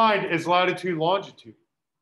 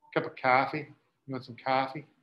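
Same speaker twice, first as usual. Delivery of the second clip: soft put-on Boston accent; 6 semitones lower, 6 dB quieter than usual. Showing off an accent after offering to, doing a Boston accent. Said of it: "bust out my Boston accent".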